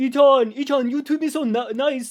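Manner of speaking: put-on high French accent.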